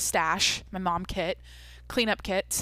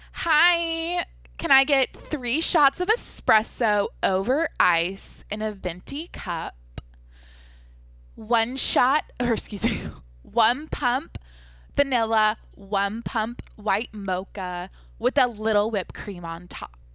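put-on voice with "hi" drawn out; 3 semitones higher, 4 dB louder than usual. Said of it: "exactly how he does it, in his like voice and everything".

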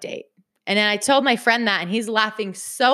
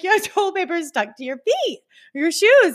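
pitched-up voice, breaking into laughter while talking; 8 semitones higher than usual. Retelling a man pointing out toilet paper stuck to her shoes: imitating laughing while talking. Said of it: "he starts breaking out laughing".

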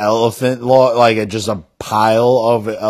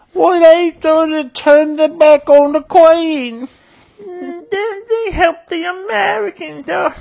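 put-on British accent. Joking around with friends, speaking in a put-on British accent. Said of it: "That British accent".

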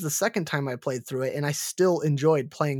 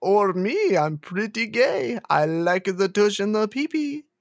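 put-on vampire voice, pitched higher; 6 semitones higher, 4 dB louder than usual. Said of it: "You sound like Dracula".

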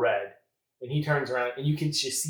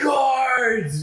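booming, very loud, very high-pitched bellow; 12 semitones higher, 8 dB louder than usual. Voicing Liverich as everyone stops and stares at the intruders: Liverich bellowing. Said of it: "Liverich just bellows".

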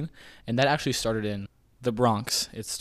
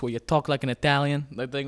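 New York Brooklyn accent; 3 semitones higher than usual. Explaining the Brooklyn accent while demonstrating it; New York accent. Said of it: "the New York accent like this".

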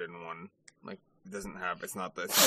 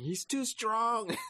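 play-acted, shrill, very high pirate scream. Retelling pirates being thrashed, imitating pirates screaming. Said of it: "they're just screaming".

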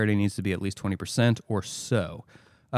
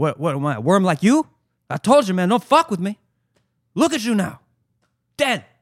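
very high, loud, shrill, bad put-on Cuban accent; 10 semitones higher, 7 dB louder than usual. Quoting lines for the others, in a horrible Cuban accent impression. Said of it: "horrible impression of a man doing a questionable Cuban impression".

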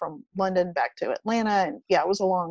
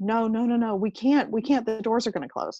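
mock-frightened children voice; 3 semitones higher than usual. Retelling the kids refusing to board as the train doors beep, imitating scared kids. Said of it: "they were both scared".

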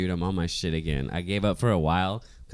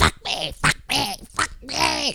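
very high, drawn-out, possessed-sounding shriek; 4 dB louder than usual. Retelling what a woman outside the door kept saying: imitating someone screaming. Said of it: "Like, screaming".

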